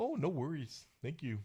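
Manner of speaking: exaggeratedly polite, overly nice Canadian voice. Joking about two Canadian hockey teams playing each other: mock overly polite Canadian player. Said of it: "they're both being very nice to each other".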